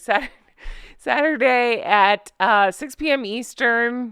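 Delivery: slow words spoken through leftover laughter. Announcing the book club's live chat time, laughing while talking. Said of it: "See, I'm still laughing".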